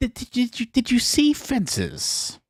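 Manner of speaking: very high, halting put-on voice, tripping over words. Asking another speaker about a film, Jiminy Glick impression. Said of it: "That's my, um, Jiminy Glick impression there".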